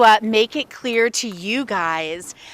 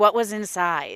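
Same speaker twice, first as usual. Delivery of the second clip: plain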